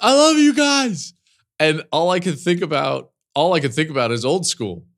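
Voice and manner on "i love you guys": put-on shout, much higher, louder. Recounting how someone shouted during an interview, retelling a shout. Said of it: "and he just shouts".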